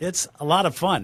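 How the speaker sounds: openly sarcastic, slow drawl. Describing complicated, messy-finance buyers to another speaker: sarcastic. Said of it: "I'm saying that sarcastically".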